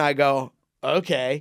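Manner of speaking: ordinary delivery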